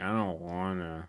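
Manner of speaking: soft, drowsy, sleepy fresh-out-of-bed voice. Describing how you sound when told to get up: imitating just-woke-up voice. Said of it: "how you sound when you wake up".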